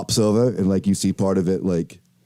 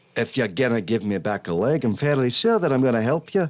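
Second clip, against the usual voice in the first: sudden put-on Scottish accent. Role-playing a bird offered a leg back, scottish accent. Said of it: "Sorry, I went to Scottish".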